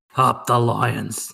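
terrible rough, creaky, badly done croak. Offering to say the promised cheer for him, trying a terrible Brownie voice. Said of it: "Or should I do it in like a brownie voice?".

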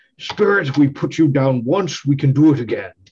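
taunting, defiant battle shout. Player voicing their character during a goading attack in a game: Norhill shouting. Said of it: "as Norhill shouts out".

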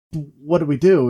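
ordinary talk, nothing marked

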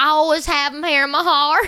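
put-on American Southern accent. Retelling what a character says at the end of a show, in a Southern accent. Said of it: "That was Southern".

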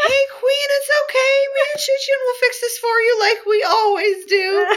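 very high-pitched, cheerful, beaming buddy voice.

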